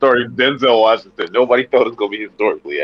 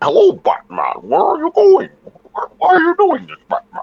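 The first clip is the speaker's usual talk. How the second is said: bad put-on villain voice, very high and swooping; 4 dB louder than usual. Asked what Venom sounds like, the speaker answers in a Venom voice. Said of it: "Venom voice".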